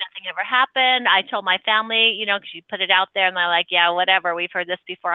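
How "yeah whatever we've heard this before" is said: usual speaking voice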